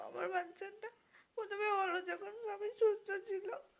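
tearful, sobbing, crying through the words.

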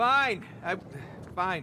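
loud, high-pitched yell.

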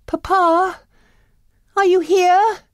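calling out, very high and long. Arriving at a castle looking for her father, crying out. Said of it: "cried Belle".

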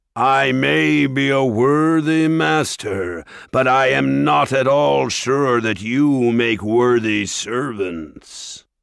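ringing, drawn-out, sneering ogre voice. Reading a story, Mulgarath answers the dwarf lord, in a ringing Mulgarath voice. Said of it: "The ogre's great horned head loomed over the rest of the creatures as he turned back to the dwarves with a sneer. ... [name]'s ringing tones echoed through the quarry".

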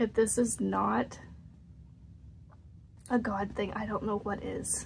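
teary, close to tears. Speaking to viewers about a reply she received, teary-eyed. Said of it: "I'm getting teary-eyed".

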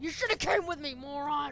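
loud, crying-out, angry scolding yell.

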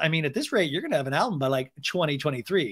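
ordinary talk

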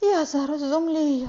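crying out in alarm. The mother sees a little man at the table with her son, crying out in alarm. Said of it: "перша зойкнула мама".

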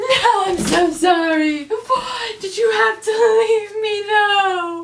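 crying through every word, high, slow and loud. Breaking down after asking how anyone could like the show: crying. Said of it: "(cries again)".

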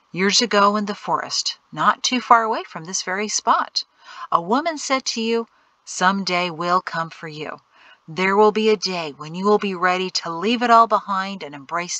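plain reading voice

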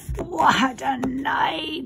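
raspy voice. Narrator reading a man repeating himself: hoarse. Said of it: "he repeated hoarsely".

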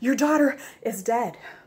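out of breath. Narrator reads a servant who has just rushed up, speaking breathlessly. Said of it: "he said breathlessly".

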